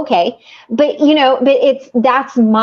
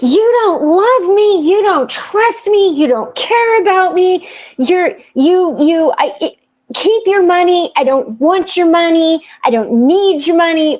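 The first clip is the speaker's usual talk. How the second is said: put-on high, heated, accusing rant, stammering over words; 6 semitones higher than usual. Recounting a fight with the husband, retelling screaming at him. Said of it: "I'm like screaming at my husband".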